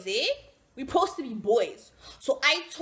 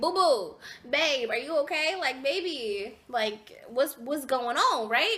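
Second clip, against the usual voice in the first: usual speaking voice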